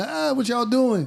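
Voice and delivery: play-acted screaming, way up high. Retelling walking in on Gil in the back room: imitating Gil screaming. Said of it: "He was screaming".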